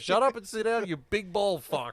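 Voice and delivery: put-on loud, high American accent. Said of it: "being American, goes".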